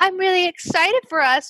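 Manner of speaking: high, gushing, mock semi-British accent.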